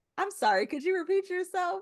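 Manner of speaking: very high, polished, polite professional voice. Speaker shows how she switches to her professional self, imitating her polite professional voice. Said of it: "I have to turn on professional [name]".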